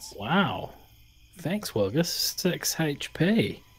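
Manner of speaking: genuinely surprised, taken aback, high-pitched. A player thanks the character who just healed him, surprised. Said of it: "I love the surprise in your voice".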